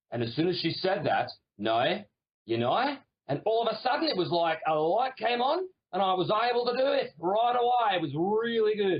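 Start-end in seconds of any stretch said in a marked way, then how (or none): 1.5-2.9 Australian accent, "no" pronounced "noi". Showing how saying no like n o i sounds: australian accent. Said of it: "say the word no as though it's spelled N O I".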